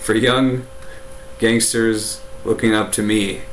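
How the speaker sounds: plain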